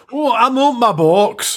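very high, very slow Glaswegian accent. Prompted to pronounce a distro's name in their best Glasgow accent: Glasgow accent. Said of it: "with your best Glasgow accent".

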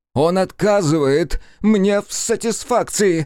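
loud, high, drawn-out shout. Narrating a story, during a dispute, a man cries out, shouted. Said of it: "выкрикнул Никитин".

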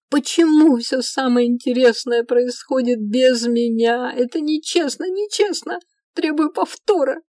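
all-out, high, full-throated shouting. An elf, waving his arms, protests to a woman: shouting. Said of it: "Мираэль кричал так".

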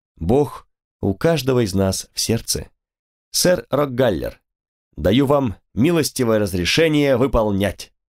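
plain reading voice

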